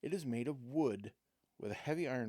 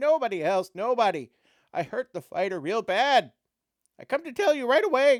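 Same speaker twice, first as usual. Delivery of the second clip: whining goblin voice, very high and loud; 10 semitones higher, 15 dB louder than usual. Narrating a story, the reader voices the goblin answering the man in a whimpering goblin voice. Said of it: "whimpers the goblin".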